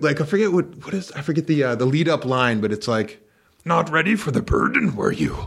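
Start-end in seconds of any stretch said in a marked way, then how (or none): 3.6-5.5 put-on little old alien voice, higher. Retelling funny Star Wars line deliveries: Yoda voice. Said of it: "Like Yoda, he's like".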